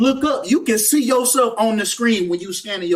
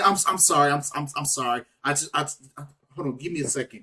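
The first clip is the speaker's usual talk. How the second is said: fake stuttering, tripping over starts, repeating words; 8 semitones lower, 8 dB quieter than usual. Acting out a witness trying to speak right after it happened: mock stuttering. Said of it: "You gonna be stuttering".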